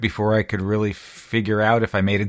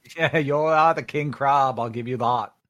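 terrible, bad, fake put-on Boston accent; 4 semitones higher than usual. During a board game, answering another player in a bad Boston accent. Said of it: "that was the worst Boston accent".

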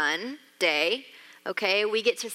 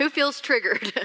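ordinary delivery

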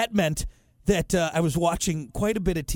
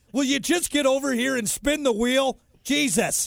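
angry, pitched-up, short-fused, fed-up outburst, acted; 8 semitones higher than usual. Describing a host angry at contestants: imitating Bob Barker angry. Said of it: "the quicker he got angry at contestants".

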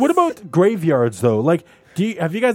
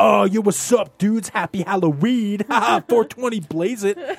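wannabe hip guy voice, much higher; 3 semitones higher than usual. Explaining how to tell people smoking weed to leave, trying-to-be-hip guy voice. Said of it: "you're not trying to be the hip guy".

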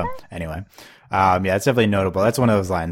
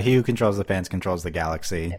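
usual speaking voice

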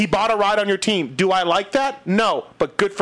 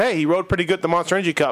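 normal talking voice

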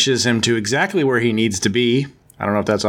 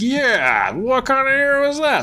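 high, squeaky mock voice. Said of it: "Odin's like".

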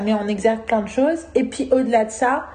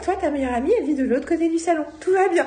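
high, mock clingy, emotional, needy delivery; 5 semitones higher than usual. Retelling what you said to Yael, acting out needy emotion. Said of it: "en mode emotion, neediness".

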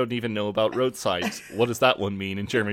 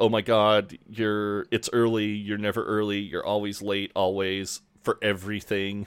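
ordinary delivery

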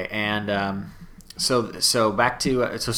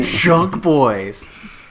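high, loud, mocking, condescending tone; 5 semitones higher, 6 dB louder than usual. Explaining how others say the nickname, in a mock-condescending tone. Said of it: "It's because it's in a condescending way".

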